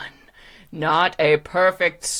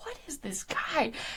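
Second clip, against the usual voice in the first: whispered, baffled, bewildered delivery. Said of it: "You're like".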